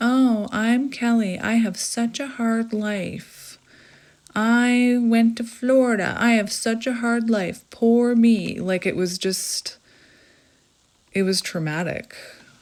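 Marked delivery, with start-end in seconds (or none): 0.0-8.6 scornful, sarcastic, heavily mocking tone. Retelling her dad's emails, the speaker mimics his mocking tone. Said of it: "in a very mocking tone".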